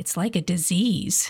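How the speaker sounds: mock teenage muttering, under the breath. Retelling what a girl said under her breath, imitating a teenage mutter. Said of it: "under her breath, in a very teenage manner".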